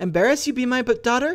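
very high, angry voice, cracking and breaking. A narrator reads a mother's reply to her daughter, voice cracking with anger. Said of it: "Her voice was cracking with anger".

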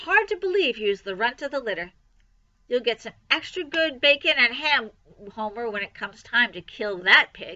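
plain reading voice

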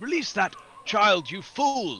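shouting. A player's character, asked what to do, confronts the goblin: shouting at the goblin. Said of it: "I will shout at the goblin and say".

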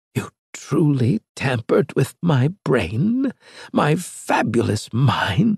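aghast, horrified, disbelieving, can't-believe-it tone. Narrator reads a character's question after Maddox explains himself: horrified disbelief. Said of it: "asked in horrified disbelief".

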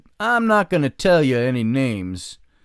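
put-on voice of an old rodeo hand. Retelling a story an old rodeo guy once told: imitating the old rodeo guy. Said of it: "He kind of talked like this".

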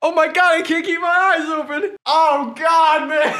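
shrill, very loud, high-pitched, tearful crying speech. Trying a tear stick with eyes streaming: crying while talking. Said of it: "you're really crying".

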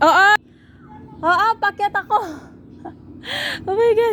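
very high, dizzy, frightened, drawn-out voice. Climbing up high while talking to viewers, dizzy from the height. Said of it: "Pero nalulula ako".

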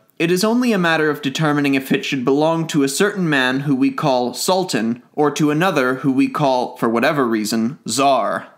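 ordinary delivery

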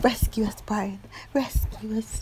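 mock, high, breathy, pleading whisper.

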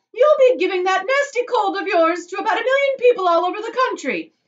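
very high, piercing, shrill, loud yell. A woman shouts at a boy lapping chocolate from the river, shouting. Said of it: "shouted Mrs. Gloop".

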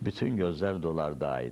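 slow, wrong middle-syllable stress in dolardaydı.

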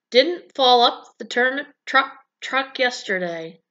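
ordinary talk

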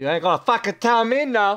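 loud, high-pitched yell. Playing a game with others, then yelling at someone. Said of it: "I didn't mean to yell at you".

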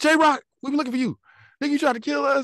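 very high-pitched, confrontational voice. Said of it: "Tone run in".

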